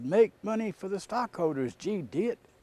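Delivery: high acted yell. Retelling how a finance executive answered in a meeting: imitating someone yelling. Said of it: "And he yelled".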